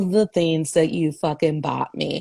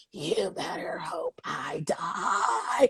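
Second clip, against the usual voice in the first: drawn-out, very slow, croaking dying voice; 9 dB quieter than usual. Retelling a dying character's line: imitating a croaking dying man. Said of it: "croaking to death".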